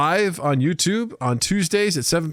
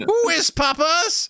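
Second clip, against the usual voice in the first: very high-pitched English accent; 11 semitones higher than usual. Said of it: "You say it with a British accent".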